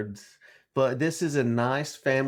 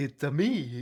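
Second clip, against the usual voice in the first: put-on, cartoon-style Italian accent; 4 dB quieter than usual. Introduced on a podcast by its host, answering with a Mario voice. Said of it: "That's Mario".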